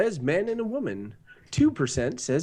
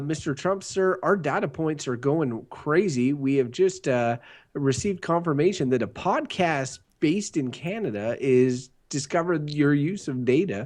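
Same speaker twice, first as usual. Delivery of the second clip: ordinary talk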